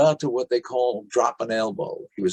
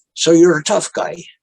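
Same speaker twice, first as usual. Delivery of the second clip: put-on very loud voice with slight Irish accent; 6 semitones higher, 8 dB louder than usual. Retelling what an Irish art teacher said: Miss Finan's slight Irish accent. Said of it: "and she had a bit of an accent".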